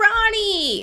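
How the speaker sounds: put-on squealed, very high-pitched New Jersey accent. Speaker quotes a girl arriving on the scene in a new jersey accent. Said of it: "This is like a New Jersey accent".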